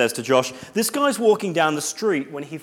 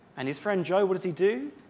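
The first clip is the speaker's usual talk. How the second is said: ordinary delivery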